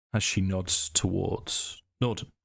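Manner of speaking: ordinary delivery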